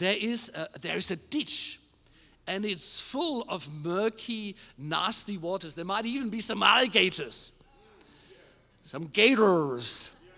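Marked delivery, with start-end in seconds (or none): 8.8-10.1 fake American accent, lower and louder. A speaker giving a talk drops into a fake american accent. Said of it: "That's my fake American accent".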